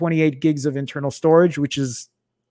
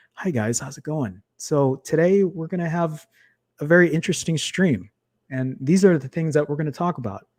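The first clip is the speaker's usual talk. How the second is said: put-on, serene, very calm, polite host voice; 4 dB quieter than usual. Imagining greeting stream viewers without ranting, in a put-on very calm voice. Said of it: "trying to be very calm and".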